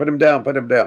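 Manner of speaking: pressing, insistent, repeated, half-voiced screaming manner. Retelling someone screaming up at the helicopter during a lift: imitating someone screaming. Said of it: "he started screaming at the helicopter".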